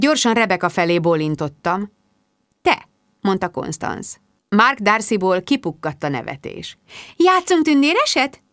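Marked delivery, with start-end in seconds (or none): 7.2-8.3 light, trilled, lilting voice, pitched up. Rebecca changes tactics and tries to take Constance's hand, trilling. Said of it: "Trillázta a taktikát változtatva Rebecca".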